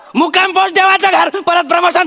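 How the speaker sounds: high-pitched, loud, crazed yelling.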